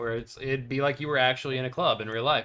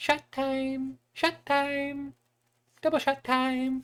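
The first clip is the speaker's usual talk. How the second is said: put-on teeny, squeaky voice pitched way up; 13 semitones higher than usual. Recounting a player calling out from across the room, in the tiniest voice. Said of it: "in the tiniest fucking voice".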